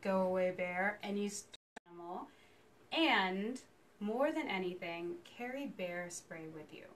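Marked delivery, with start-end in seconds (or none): 0.0-1.0 big, low, resonant voice. Showing how to scare off a bear in the field: deep voice. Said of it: "you use your deep voice".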